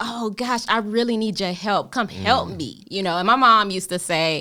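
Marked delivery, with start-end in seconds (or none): 0.0-2.8 put-on desperate pleading, higher. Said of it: "a really passionate plea".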